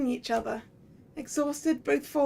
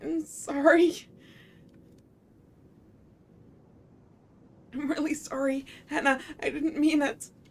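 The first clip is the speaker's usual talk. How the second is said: trembling, shaking, distressed voice. Apologizing again and again while shaking: trembling distressed voice. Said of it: "you're shaking".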